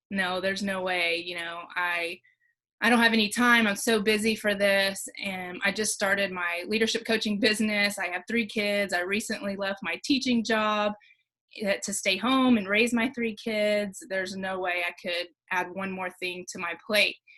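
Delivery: normal talking voice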